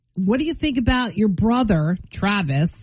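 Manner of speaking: usual speaking voice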